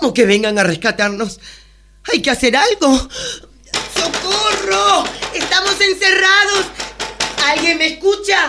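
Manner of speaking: high, rising panicked cries. A woman stuck in a lift, just told to stay calm, panicked. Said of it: "Calma, señorita, calma".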